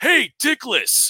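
yelling out. Retelling an actor's story of someone in a passing car, retelling a yell. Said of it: "somebody yelled out".

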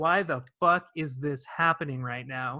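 ordinary talk

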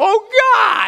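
very high outcry. Retelling a man's fall from a roof, imitating crying out to god. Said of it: "he's crying out".

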